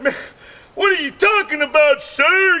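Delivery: acted panicked, freaked-out voice. Speaker retelling the salesman's reply, imitating a freaked-out salesman. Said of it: "he's freaking out. He's like".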